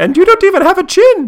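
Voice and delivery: very high, very loud squealing cartoon voice. Trying to sound like Baljeet, the speaker does a high-pitched Baljeet voice. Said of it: "I'll have to work on my Baljeet. He's got a very high-pitched voice".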